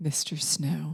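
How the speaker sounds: slow, whispered infomercial voice. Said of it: "I used my infomercial voice".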